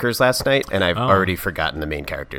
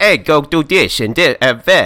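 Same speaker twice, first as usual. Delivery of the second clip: loud, drawn-out put-on New York accent; 7 semitones higher, 7 dB louder than usual. Discussing an actor's bad accent, speaker recalls their New York guy voice. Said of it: "our New York guy".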